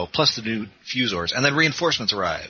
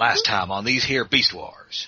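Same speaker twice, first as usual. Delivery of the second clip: cowboy character voice, narrating. Imagining the Beast Wars recap narration done in Quickstrike cowboy voice. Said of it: "Colin Murdoch doing his Quick Strike voice".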